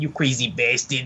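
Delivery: phrase delivered in a Yiddish accent.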